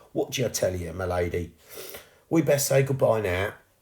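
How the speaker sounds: plain reading voice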